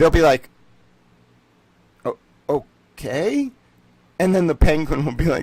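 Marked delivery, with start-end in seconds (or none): 2.0-3.5 utterly bewildered, halting, stumbling delivery. Acting out the french answering in imagined scene: acting baffled. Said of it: "They'd be so fucking baffled".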